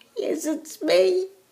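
crying, tearful voice. Answering when someone asks if that is her, crying. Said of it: "Are you crying because of your friend?".

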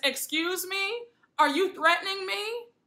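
indignant, affronted tone. Speaker retells a heated exchange, quoting the other woman: mock-angry retelling. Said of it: "Brooks is really pissed and she says".

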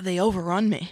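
muttering under the breath, barely voiced. Retelling how someone with a suit overrun by bugs muttered: imitating muttering under breath. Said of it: "says under his breath".

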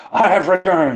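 very high, booming, bellowing voice. Character bursts through the coffin door, throwing off his cloak: Derelax bellowing. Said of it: "bellowing and saying".

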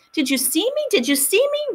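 shrieking with excitement, very high and rising. Wren calls out to her crying Mommy after walking by herself, shrieking in excitement. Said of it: "Wren was shrieking in her excitement".

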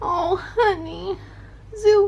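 annoying, very high, cutesy pet-talk voice. Speaker coaxing the cat zoo to meow: annoying pet voice. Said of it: "use these annoying voices".

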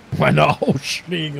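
slow, drawn-out mocking tone.

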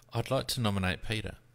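very soft, hushed, under the breath. Putting in a nomination to the host, saying it very quietly. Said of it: "I'm saying it very quietly".

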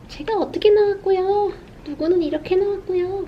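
put-on eager, excited kid voice, pitched high.

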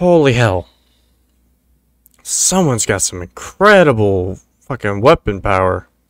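so stunned the speech comes out wrong. During a shooter game, the streamer reacts to a surprise shot, stunned. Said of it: "I'm so stunned I can't even talk right".

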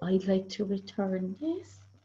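quiet, soft, understated polite tone. Retelling how a woman first asked at the counter, imitating a quiet voice. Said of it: "in a quiet voice first she said".

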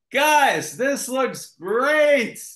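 very high, loud, top-of-the-lungs yell. Retelling what they yelled to everyone on seeing the set, retelling a shout at full volume. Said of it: "So at the top of my lungs".

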